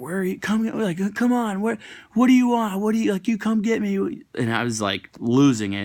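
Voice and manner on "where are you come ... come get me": very high-pitched, shrieking scream. Retelling someone standing on a rooftop during a fight: imitating someone screaming.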